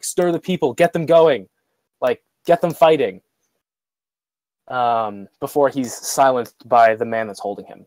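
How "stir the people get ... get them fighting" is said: mock urgent calling out, mild. In a narrated scene, a held prisoner shouts over the crowd, yelling as loud as possible. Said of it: "he's yelling out as loud as he can".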